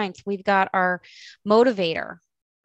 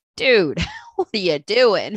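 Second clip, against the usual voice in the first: swooping, joking comic-relief sidekick voice; 4 dB louder than usual. Voicing a comic relief mentor reacting to the character: comic relief mentor voice. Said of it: "comic relief being like".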